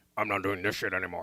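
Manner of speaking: deep cartoon character voice. Urged by the other speaker to try it, speaking in the Strong Bad voice. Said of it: "You should do it in the strong bad voice".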